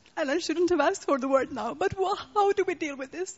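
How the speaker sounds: on the verge of crying. Speaker taking the floor to ask the panel a question, crying. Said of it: "I'm going to cry now".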